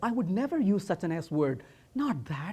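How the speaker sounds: secretive, hushed half-whisper, very quiet. Retelling denying using the S word to his wife: imitating own past half-whisper. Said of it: "And then I whispered and said".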